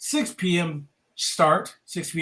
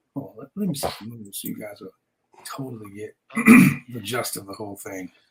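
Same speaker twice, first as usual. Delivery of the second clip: very deep, seductive, broken-up purr; 9 semitones lower than usual. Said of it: "She was like in her sexiest voice".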